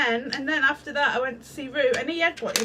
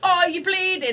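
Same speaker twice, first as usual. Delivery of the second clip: shout, higher and louder; 6 semitones higher, 4 dB louder than usual. Retelling what Kevin did when she got hurt: imitating Kevin shouting. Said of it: "he just shouts at you".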